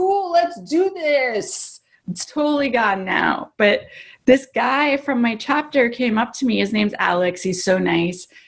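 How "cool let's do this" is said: high, slow, breezy, unbothered confidence. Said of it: "Now I'm like".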